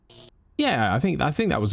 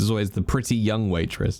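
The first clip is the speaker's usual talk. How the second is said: pretty hit hard with a falling tune. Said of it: "qualify her looks when we describe it".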